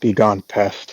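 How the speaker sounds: muttered under the breath. Narrating a fight scene, voicing a character who mumbles under his breath. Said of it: "he mumbles under his breath".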